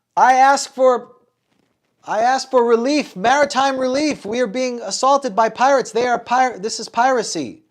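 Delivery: very high, very loud, shrill small-voiced scream. Voicing a gnome on a sinking ship calling for help: screaming for help. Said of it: "scream at you all".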